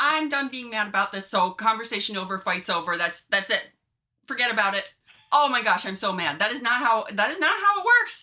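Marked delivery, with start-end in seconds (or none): none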